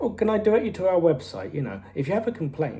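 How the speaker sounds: sweetly accommodating, very, very friendly manager voice. Retelling a scene where the manager deflects questions: imitating Gus Fring being very friendly. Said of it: "he's being very, very friendly".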